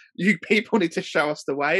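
mock reverence, sarcastic, overly earnest, tongue-in-cheek. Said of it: "he does it in such a sarcastic way".

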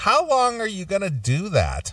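acted, very high, swooping voice, dripping with scorn. Retelling what a woman asked about the show: imitating disgust and disdain. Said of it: "with such disgust and disdain in her voice".

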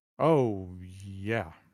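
unexcited, flat tone. Answering a question back about being excited, not sounding excited. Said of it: "You don't sound very excited".

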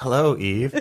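play-acted high, quavering, wobbly trembling delivery. Retelling how a greeting line is done, with a trembling voice. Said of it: "With this sort of tremble in my voice".

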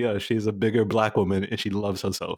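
normal talking voice

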